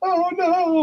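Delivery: very high-pitched, weepy, tearful wail. Retelling a film scene where a woman runs up crying: imitating a crying woman. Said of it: "She runs up crying afterwards".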